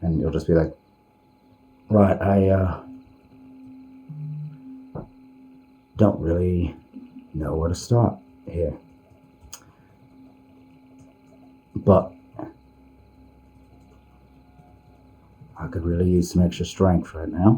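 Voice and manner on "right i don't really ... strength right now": whispered all the way through, hushed. Acting out a character's prayer asking for extra strength: whispering. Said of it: "he is gonna be s-, like, whispering".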